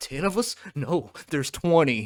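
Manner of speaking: offended, indignant, earnest tone. Imitating viewers who take the joke too seriously: mocking a fan taking it seriously. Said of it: "some of y'all out there gonna take that real serious".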